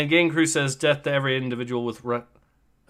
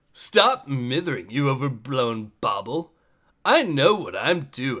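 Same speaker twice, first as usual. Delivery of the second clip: put-on nineties teenager voice, full of attitude; 4 semitones lower than usual. Speaker voicing a character given a nineties teen with attitude voice. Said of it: "nineties uh, teen with an attitude voice".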